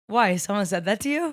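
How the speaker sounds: ordinary talk, nothing marked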